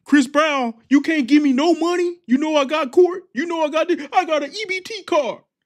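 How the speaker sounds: mock, very high-pitched, sobbing whine. Retelling a man on a talk show complaining about child support, imitating someone crying. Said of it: "he started crying, saying".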